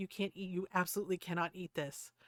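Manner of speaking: stern, firm, strict no-nonsense tone. Retelling how Lloyd warned the dog about onions: imitating Lloyd sounding stern. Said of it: "Lloyd was very stern".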